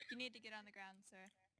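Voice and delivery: unconvincing, half-hearted, no conviction behind it. Told to order a man to the ground like he means it; unconvincing command. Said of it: "You don't sound like you mean it, man".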